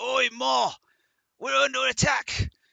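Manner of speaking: very loud, shrill, rough, high giant bellow. Voicing a giant who spots intruders and calls out: giant calling out. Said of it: "a bladed giant comes stumbling down the hallway".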